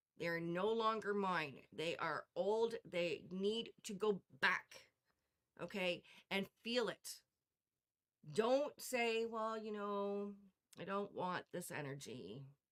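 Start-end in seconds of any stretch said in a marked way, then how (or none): 9.3-12.5 uncommitted, lukewarm, passive, half-hearted delivery. Showing the wrong way to say it: passive, half-hearted tone. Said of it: "because it's very passive".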